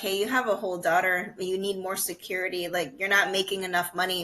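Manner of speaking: usual speaking voice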